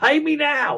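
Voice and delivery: high-pitched, really angry voice, acted out. Recapping a movie scene, acting out a character's line, mock-angry demand. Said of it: "And he's like really angry".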